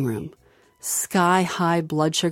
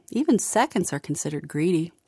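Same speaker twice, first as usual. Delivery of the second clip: ordinary delivery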